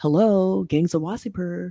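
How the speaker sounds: put-on snotty voice. Speaker recounting a film scene quotes a character, mock-snotty tone. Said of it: "he says in a really snotty way".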